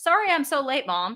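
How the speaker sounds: calm, cool, unbothered, no-fuss delivery. A mother retelling what her son said when three minutes late, imitating a calm apology. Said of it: "just calmly goes".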